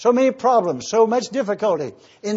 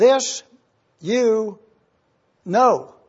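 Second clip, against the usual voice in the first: reading much slower. A speaker reading a Bible verse aloud, reading slowly. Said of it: "I instructed myself before I got here tonight to read slowly".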